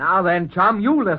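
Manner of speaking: angry, losing temper, temper boiling over. Answering a caller who has the wrong number: losing temper. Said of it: "temper, temper".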